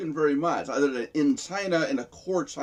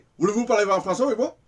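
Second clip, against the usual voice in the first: fast, rattled-off, slurred French, pitched up; 7 semitones higher, 3 dB louder than usual. Imitating french speakers talking, in fast, soft, slurred french. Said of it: "they talk fast, soft, and they've got a an accent".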